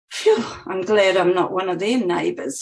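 ordinary delivery

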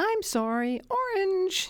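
very high, tiny, plaintive little voice. Walking out the door, speaker quotes the voice calling after: imitating a plaintive little voice. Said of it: "this plaintive little voice".

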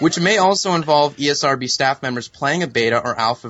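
normal talking voice

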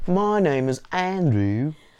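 put-on Cockney accent, very high pitched and loud. Opening the show after the hosts agree to do it in cockney accents. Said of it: "More like Cockney".

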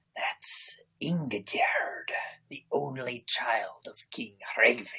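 hushed, breathy, whispered hiss. Retelling a scene where a character nudges his companion, hissing. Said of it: "He nudges Thord and hisses".

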